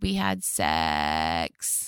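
fried, rattling creak on each word. Retelling what the teenagers can't say at breakfast, vocal fry. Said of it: "the vocal fry".

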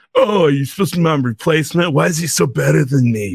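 cartoon villain character voice. Retelling a story, the son confronting his father's robot: Vegeta voice. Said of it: "Why do I sound like the prince of all Saiyans".

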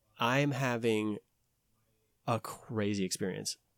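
ordinary talk

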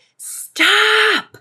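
mock sharp, very high-pitched, shrill yell. Retelling yelling at a child after a phone call: retelling a scream. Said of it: "finally hung up the phone and yelled".

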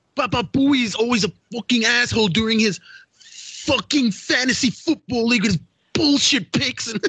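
very high, slow, unhurried complaining voice. Doing an impression right after the actor is discussed: Michael Rappaport impression. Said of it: "That's a pretty damn good impression".

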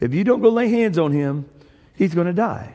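ordinary delivery

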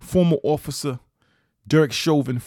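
put-on New York accent on the words. Recalling how a man referred to Derek Chauvin, imitating his New York accent. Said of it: "he would say in his New York accent".

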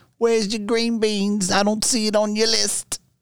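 mock Australian accent, high-pitched and slow.

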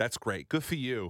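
put-on sarcastic thick North Jersey accent. Retelling how a woman with a thick North Jersey accent talked, mock-sarcastic North Jersey accent. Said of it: "Everything that comes out of their mouths is sarcastic".

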